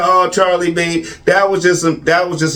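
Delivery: ordinary delivery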